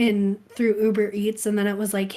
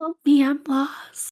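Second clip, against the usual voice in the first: put-on lost-sounding little child voice; 4 semitones higher than usual. Improvising a bit after being told they sound like a child; lost little child voice. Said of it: "Yes, oh my god!".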